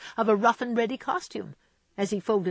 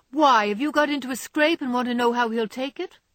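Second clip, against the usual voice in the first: pointed, rather sharp, raised voice; 5 semitones higher, 5 dB louder than usual. A girl, asked how Grandpa is this week, replies rather sharply. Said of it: "asked Joe, rather sharply".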